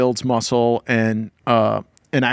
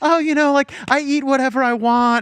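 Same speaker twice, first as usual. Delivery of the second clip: put-on very high, derisive skinny-girl send-up; 13 semitones higher than usual. Teasing a co-speaker by imitating a skinny girl, mocking skinny girl voice. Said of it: "one of those skinny bitches who's just like".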